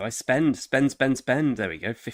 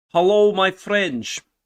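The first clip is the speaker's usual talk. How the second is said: loud, pitched-up, fake Dutch accent; 8 semitones higher, 7 dB louder than usual. Greeting viewers at the start of a stream: put-on dutch accent. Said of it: "It's meant to be English Dutch".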